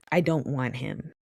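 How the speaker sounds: mock flat, emotionless, deadpan delivery. Recapping a scene as Hachi runs off, mimicking her emotionless tone. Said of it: "says with the most emotionless tone".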